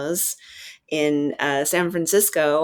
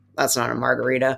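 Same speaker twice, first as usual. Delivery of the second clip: put-on bartender mutter, much lower pitch; 4 semitones lower than usual. Retelling his local bartender's remark: Phil Ward muttering under breath. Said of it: "sort of under his breath".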